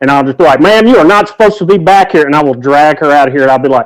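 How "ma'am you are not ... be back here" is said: commanding bouncer voice, pitched up. Describing dragging a woman out, playing a newfangled bouncer. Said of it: "some kind of newfangled bouncer".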